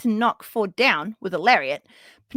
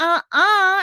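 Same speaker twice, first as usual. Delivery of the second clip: saucy, dismissive, sassy, pitched-up uh-uh; 8 semitones higher, 4 dB louder than usual. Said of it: "Willow's like".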